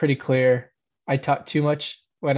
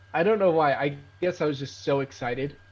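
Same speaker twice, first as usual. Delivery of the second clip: plain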